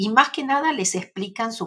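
plain

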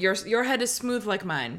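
normal talking voice

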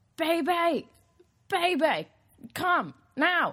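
loud, very high, very slow, drawn-out yell. Speaker retells Spencer calling the speaker over from his phone, retelling a shout. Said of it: "he just yells".

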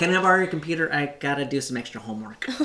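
high, nerdy put-on voice. Retelling a comedian's imitation of his nerdy son waking up: imitating nerdy Damon Wayans Jr. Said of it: "he does a little imitation of him".

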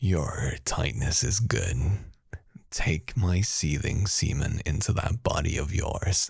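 demonic character voice. Asked to read the demon's lines from a page aloud: demon voice. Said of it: "Crunchy should read the demon voice".

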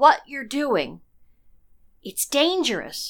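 soft, quiet, slightly high-pitched. Narrator voicing Natalia speaking to Lara, quiet. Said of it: "said Natalia quietly".

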